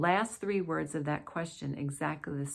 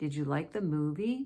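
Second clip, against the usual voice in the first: voice gliding upward through "store". Demonstrating an example question for a pronunciation lesson, rising intonation. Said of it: "My voice still rises".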